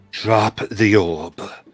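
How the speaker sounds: very loud, booming delivery with an echo. Game master voicing Unga casting a spell at a player, in Unga's echoey voice. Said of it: "It'll come in an echoey voice".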